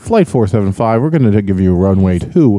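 mock bored air traffic controller voice. Joking that air traffic controllers sound bored, imitating a bored air traffic controller. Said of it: "Air traffic controller sounds so bored".

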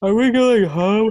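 high, put-on, words stretched through a yawn. Retelling what she would say at the end of shows, imitating her yawning. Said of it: "like yawning".

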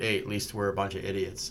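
ordinary delivery

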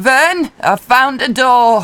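high, loud shout carried out. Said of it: "I'll shout back".

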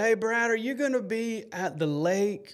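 small, sweet way of speaking. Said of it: "his sweet little voice".

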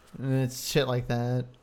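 normal talking voice

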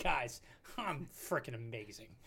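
mock chuckling, laughing through the words. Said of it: "Scherzer's laughing. ... He's like".

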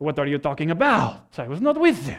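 low, clumsy, fake French accent. Retelling Peter confronted by a little girl: Peter in bad French accent. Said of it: "That's my best French".

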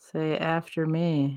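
slow, soft, quiet, drawn-out repeat.

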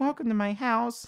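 embarrassed, sheepish voice, very high-pitched. A host welcomes guests into his gadget-strewn house, sheepish. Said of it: "he said sheepishly".

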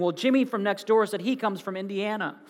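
normal talking voice

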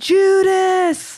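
shrill, very high, stretched-out yell. Retelling a shout from someone in a concert audience: imitating someone yelling. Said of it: "somebody yells".

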